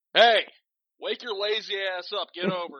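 very high, very loud, shrill rousing holler. Pretending to call someone out of bed: pretend shouting someone awake. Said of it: "let me wake her up".

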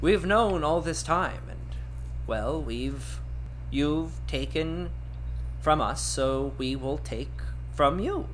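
plain, sage, knowing, matter-of-fact delivery. A narrator voices a penguin character's reply: matter-of-fact. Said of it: "just says matter-of-factly".

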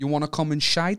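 clumsy, butchered, bad Dutch accent. Retelling what a man called out to him and his friends, in a butchered Dutch accent. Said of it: "Say it again".

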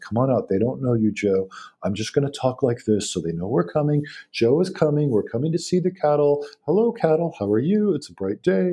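gentle, mild-mannered, unhurried patter. Retelling a farmer walking out to his cattle: imitating Scott's soft-spoken talk. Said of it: "always speaks very quietly".

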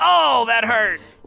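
tiny elf voice, very high, shouting. A game master voices another little elf shouting from the holly, little elf voice shouting. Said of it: "another little elf voice from nearby shout".

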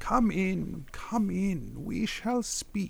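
gentle, kindly tone. Game narrator voicing an elf who turns to the newcomers: kind, smiling tone. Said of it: "turns with a very kind smile and she says".

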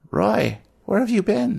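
put-on old woman voice, very high. Narrator voicing Greta as she turns to Roy at the sink, elderly woman voice. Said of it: "she looks like she's about 80 years old".

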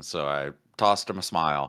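usual speaking voice

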